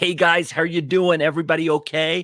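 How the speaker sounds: heavy put-on American accent. Imitating a varsity acquaintance back from six weeks in America; thick American accent. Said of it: "fat American accent".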